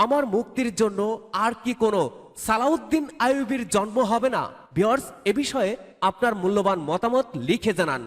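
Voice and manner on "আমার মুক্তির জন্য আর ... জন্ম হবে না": ordinary talk, nothing marked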